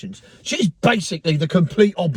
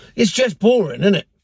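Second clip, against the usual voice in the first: ordinary talk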